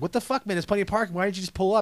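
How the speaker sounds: acted, restrained, contained angry yelling rant. Retelling telling off a driver who blocked the entrance: retelling own yelling. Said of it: "I just start yelling".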